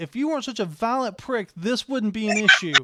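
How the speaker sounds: very loud yelling. Retelling what a character yells at his sword: retelling his yell. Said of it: "holding the sword up and yelling".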